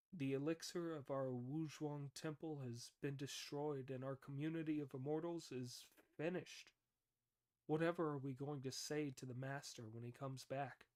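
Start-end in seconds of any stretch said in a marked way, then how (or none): none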